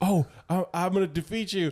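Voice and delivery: high, goofy, boastful hero voice. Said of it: "and he's like".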